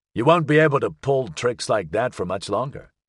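ordinary delivery

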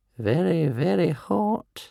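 high, mumbled muttering under the breath. Narrating, the old healer checks a boy's forehead; muttered to himself. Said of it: "he muttered to himself".

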